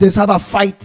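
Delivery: ordinary talk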